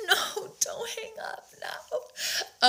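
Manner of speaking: slow, tearful begging through sobs. Retelling how he cried each time the speaker tried to hang up, imitating someone crying. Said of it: "he would start crying and be like".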